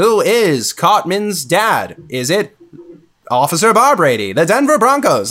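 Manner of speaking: high, swooping cartoon narrator voice. Recalling a cliffhanger episode of South Park: South Park narrator impression. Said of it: "that was a great impression of their narrator".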